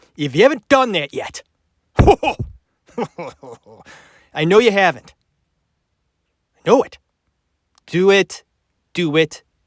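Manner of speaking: put-on angry tone. Asking listeners for reviews while getting angry now: mock angry. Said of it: "and I'm getting angry now".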